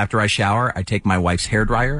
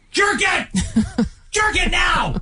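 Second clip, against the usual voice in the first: mock shouting, pitched higher. Acting out the girlfriend from a listener's message: acting out yelling. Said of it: "Stop yelling".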